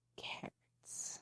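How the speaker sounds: sexy, breathy, sultry whisper, very hushed. Demonstrating photo-shoot advice to say carrots sexy, sultry whispered carrots. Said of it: "say carrots, but really sexy ... I just said carrots, but I whispered it".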